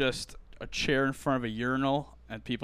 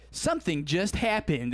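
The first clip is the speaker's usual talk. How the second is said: electronic woman's voice, much higher pitched; 6 semitones higher, 4 dB louder than usual. Describing TikTok videos, imitating the voice used in them: TikTok computer voice. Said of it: "that TikTok computer voice that's like".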